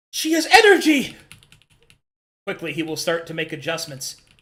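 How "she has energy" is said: loud, high-pitched excited calling out. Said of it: "Xylo will call out".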